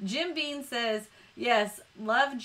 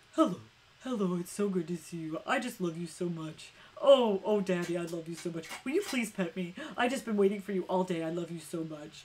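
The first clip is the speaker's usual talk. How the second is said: low, adoring, devoted, doting dog voice; 5 semitones lower than usual. Speaker shows what their dog would say: Dom voice. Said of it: "This is the Dom voice".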